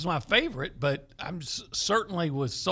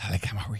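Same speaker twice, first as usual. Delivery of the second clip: put-on, mock seductive tone in a lower voice; 7 semitones lower than usual. Saying a player's name again, even more playfully: put-on sexy voice. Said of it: "I want to say it even sexy".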